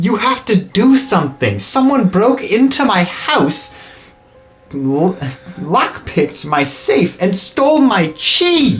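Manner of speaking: furious high-pitched yelling. Voicing a citizen yelling at a guard: furious yelling. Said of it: "the guy looks very furious as he's just yelling".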